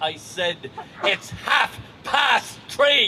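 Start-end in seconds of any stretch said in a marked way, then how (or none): 1.0-3.1 defiant put-on Irish accent. Retelling answering a kid who asked him the time: retelling in a defiant irish accent. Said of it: "in my defiant Irish accent".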